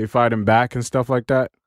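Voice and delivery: ordinary talk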